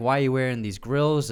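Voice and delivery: ordinary talk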